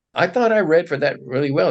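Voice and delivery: put-on indignant, aggrieved tone. Retelling a complaint to a mentor about not getting a role: imitating own indignant complaint. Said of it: "being all, you know, indignant and saying".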